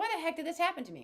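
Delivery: really mad, angry venting outburst. Retelling a dream, the speaker acts out a woman whose cat got hurt: retelling someone really mad. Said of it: "she was just really mad".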